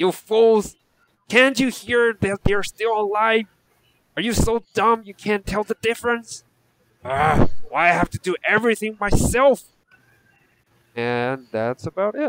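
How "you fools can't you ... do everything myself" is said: high, enraged, angry goblin yelling tirade. Voicing another goblin scolding the others: angry goblin yelling.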